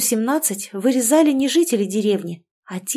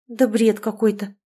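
ordinary delivery

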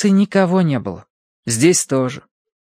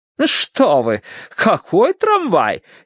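acid, mocking, slow, swooping, caustic delivery; 4 semitones higher than usual. A woman cuts in on the narrator's remark: caustic. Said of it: "язвительно ввернула миссис Меринг".

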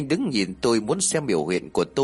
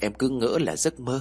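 usual speaking voice

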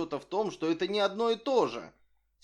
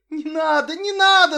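shrill, very high, very loud yell; 12 semitones higher, 11 dB louder than usual. Set down on the ground, he cries out as another reaches for the nest: shouting. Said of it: "закричал он".

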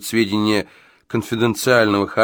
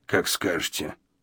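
muttered, quieter; 4 semitones lower, 9 dB quieter than usual. Gadson, told by the owner that it is time to go, gives in; muttered. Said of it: "Пробормотал он".

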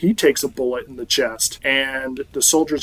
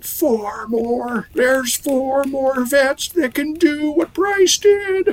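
mock very high, drawn-out wailing yell, rising pitch; 12 semitones higher than usual. Recapping an episode, the speaker acts out a wounded man screaming as he's wheeled away: retelling a scream. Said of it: "he's screaming".

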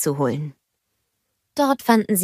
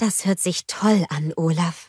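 usual speaking voice

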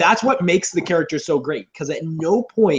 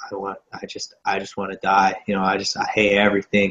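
put-on sad voice, lower, slower; 9 semitones lower than usual. Speaker describing Batman's sad phase two, imitating a sad Batman. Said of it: "Phase two is when he's sad".

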